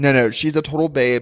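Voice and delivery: ordinary talk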